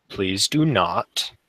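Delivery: very clear, scolding tone. Voicing Arbane as he looks at the dragon; a very clear voice. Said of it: "just says in a very clear voice".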